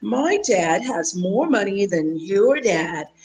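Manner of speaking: put-on slow, deliberate British accent. Retelling what a young girl said in a video: british accent. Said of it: "with a British accent and said".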